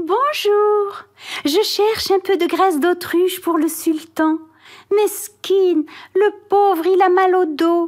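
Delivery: sugary, sweet-talking voice. Reading a story, an old woman going house to house asks townsfolk: honeyed voice. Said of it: "demandait de sa voix mielleuse".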